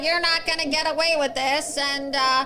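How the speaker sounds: high, very nasal voice pushed through the nose. Mocking a governor's press conferences: nasally Ron DeSantis voice. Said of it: "It's like a very nasally voice".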